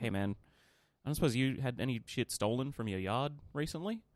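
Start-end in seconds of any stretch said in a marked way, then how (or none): none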